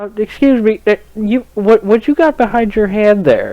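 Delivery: put-on halting, suspicious, high old lady librarian voice. Retelling how an old librarian stopped someone sneaking candy: imitating an old librarian lady. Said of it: "it's this old librarian fuck, and she's just like".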